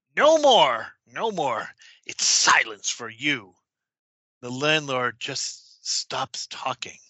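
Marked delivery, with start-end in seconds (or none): 0.2-3.6 put-on loud, swooping, sharp snap in old woman voice. Telling a story, voicing the woman cutting off the pleading landlord, retelling a sharp snap. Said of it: "snaps out".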